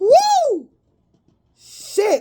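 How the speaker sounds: screaming in excitement. Reacting to a tarot reading she finds great: screaming in excitement. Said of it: "I'm sorry for screaming".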